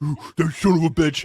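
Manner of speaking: furious, fuming, raging outburst. Imitating online fans reacting to a TV show character: imitating raging fans. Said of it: "as they're fucking raging".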